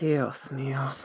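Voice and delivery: muttering quietly to oneself. Voicing a character with head in hands, saying it quietly to themselves. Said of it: "just quietly say to themselves".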